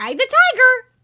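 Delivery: high, shrill, squawking parrot-like cry. Reading a jungle adventure aloud, voicing the talking parrot: parrot voice. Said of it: "It's a good parrot voice".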